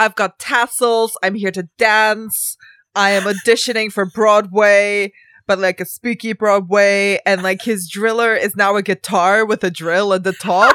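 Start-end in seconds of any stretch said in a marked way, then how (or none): 0.0-7.2 greaser-style killer character voice. Mocking a horror character who is like Danny Zuko with a drill: imitating a greaser killer character. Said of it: "He is like".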